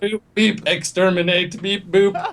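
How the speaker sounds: mechanical, high, flat beep-boop robot voice. Game player voicing a robot coming into the room, robot voice. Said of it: "this robot just comes in like".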